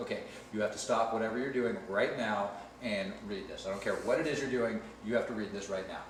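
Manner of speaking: normal talking voice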